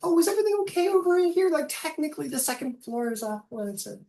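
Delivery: loud, squeaky, very high little gnome voice. Voicing a door gnome who checks on the party: door gnome voice. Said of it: "some door gnome comes over and goes".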